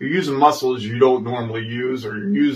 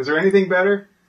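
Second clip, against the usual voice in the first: high, sarcastic, mocking tone. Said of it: "That's me being sarcastic".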